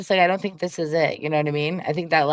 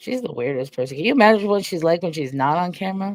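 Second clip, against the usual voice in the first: ordinary talk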